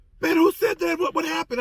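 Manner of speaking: very high, loud yelling. Retelling a man at the bars yelling a question: imitating someone yelling. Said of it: "he's hanging at the bars and he's yelling".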